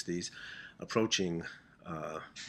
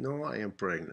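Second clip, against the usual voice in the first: mock Spanish accent, higher pitch; 2 semitones higher than usual. Retelling a woman's reply to the speaker's questions, imitating a spanish accent. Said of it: "in her Spanish accent".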